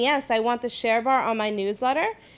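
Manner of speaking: usual speaking voice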